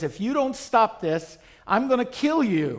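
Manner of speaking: put-on shrill, menacing, threatening screech. Retelling how the bar mitzvah boy's mother threatened the uncle, retelling a threatening screech. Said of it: "screeched at him in a threatening voice".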